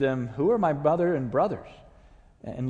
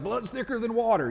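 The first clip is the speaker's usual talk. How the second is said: put-on Texas accent, pitched up; 8 semitones higher than usual. Speaking to a church in the philadelphia region, quoting a saying: put-on texas accent. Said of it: "forgive me for that accent that I just imposed upon you".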